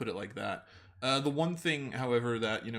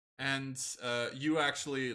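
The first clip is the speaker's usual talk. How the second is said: ordinary talk, nothing marked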